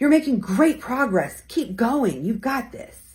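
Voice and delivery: excited, enthusiastic. Demonstrating different tones of voice for encouragement, in an excited tone. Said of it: "Excited versus reassuring".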